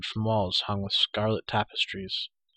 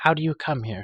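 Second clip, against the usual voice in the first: simple, direct, high-pitched tone; 5 semitones higher than usual. She questions Taryn and the others on their arrival, asking quietly. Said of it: "she asked quietly".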